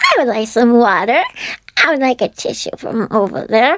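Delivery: high, babyish put-on baby talk. Recalling walking the playground with a best friend, the speaker talks in a baby voice. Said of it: "we both did baby voices".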